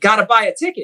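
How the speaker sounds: loud, high-pitched yell. Telling a joke, the speaker acts out God's answer to a man, retelling God yelling down. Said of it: "And God yells down at him".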